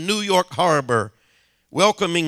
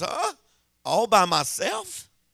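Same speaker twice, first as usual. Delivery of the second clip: tiny, small, squeaky, quavering, trembling voice; 4 semitones higher, 4 dB quieter than usual. Retelling a woman's answer to the first question, imitating a small squeaky voice. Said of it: "asked in a small, squeaky voice".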